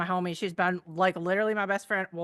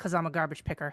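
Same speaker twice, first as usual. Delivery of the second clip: acted, bone-dry, flat, matter-of-fact deadpan; 2 semitones lower, 3 dB quieter than usual. Retelling answering a walking companion who asked about the flashlight, retelling a deadpan reply. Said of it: "And deadpan as fuck".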